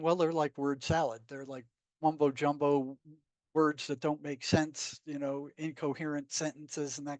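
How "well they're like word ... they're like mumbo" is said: ordinary delivery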